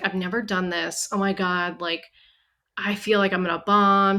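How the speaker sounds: imitated nervous voice. Retelling what a nervous contestant said before a sketch: imitating someone nervous. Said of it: "Juicy was so nervous".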